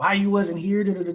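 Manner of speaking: very high, angry, irate, accusing, demanding tone. Retelling the supervisor's question on returning: imitating someone angry. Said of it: "He's mad".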